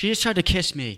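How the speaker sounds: fake, high-pitched accusing yell. Acting out an accusation in a store: pretend yelling. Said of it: "Start yelling".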